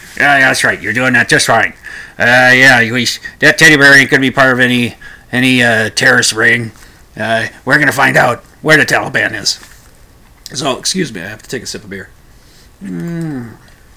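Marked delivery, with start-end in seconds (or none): 0.2-9.6 clumsy, halting put-on politician voice, full of uhs. Voicing Grandpa Cheney answering a little girl in a joke: Dick Cheney impression. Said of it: "doing a Cheney impression, which was not very good".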